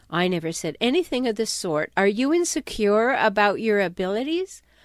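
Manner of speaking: usual speaking voice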